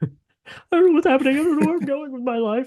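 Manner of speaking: very high, mocking, whining voice. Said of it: "doing it in that high voice too".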